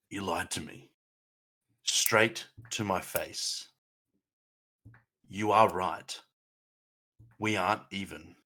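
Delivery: close, leaned-in, put-on whisper in the ear. Playing a betrayed character leaning close to another: whispering in character. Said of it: "lean in really close and whisper in Harbin's ear".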